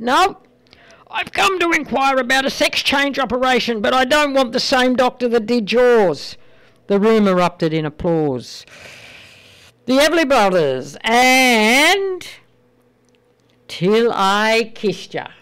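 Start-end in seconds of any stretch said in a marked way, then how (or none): 0.0-6.4 mildly raised voice, snapping back. Telling a joke where an embarrassed man in a waiting room answers, retelling a loud reply. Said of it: "in an equally loud voice said".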